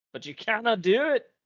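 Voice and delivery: very high-pitched, loud, put-on Scottish accent. Speaking to a teammate who wants to try it, in a scottish accent. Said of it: "I read that in a Scottish accent".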